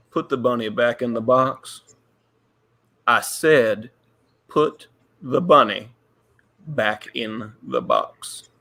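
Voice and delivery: very low, weighty, dramatic delivery. Doing a quote twice for a trivia question, dramatic quote delivery. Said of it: "I'm gonna say it twice for dramatic effect".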